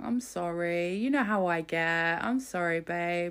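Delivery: put-on mushy, manipulative, slow, placating tone. Mocking how a man apologises after shouting: mock soft apologetic voice. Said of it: "be all soft and be like".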